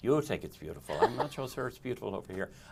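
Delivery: soft, thick, laid-on put-on Irish brogue. Host retells how a guest professor called him out, in a thick put-on irish accent. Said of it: "I'm laying that on a bit thick".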